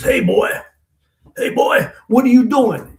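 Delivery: very high, big, loud bellowing voice. Man retelling being caught stealing at twelve by a big guy: big booming voice. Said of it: "I hear this big voice. It says".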